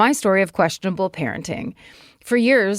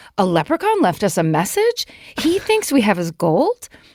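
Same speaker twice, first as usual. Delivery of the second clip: put-on astonishment, swooping and showy. A parent retells pretending to the kids a leprechaun left a message, acting surprised. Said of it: "acting surprised and saying".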